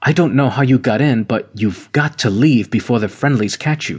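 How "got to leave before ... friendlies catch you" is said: ordinary delivery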